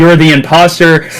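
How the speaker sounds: ordinary delivery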